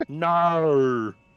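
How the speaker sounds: exaggerated, high, loud, drawn-out Australian 'naur' for no. Showing how Australians say no: exaggerated Australian "naur". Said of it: "N A U R is the, kinda how they say it".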